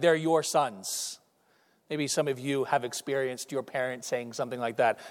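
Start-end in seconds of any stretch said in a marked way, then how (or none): 0.0-1.2 put-on half-joking, half-serious tone, quieter, slower. Retelling what mom would say to dad, retelling a half-joking, half-serious remark. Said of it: "half jokingly, half serious".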